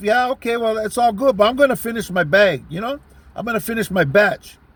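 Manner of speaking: ordinary talk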